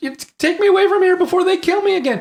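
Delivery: high, loud mock scream. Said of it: "the Doctor is screaming".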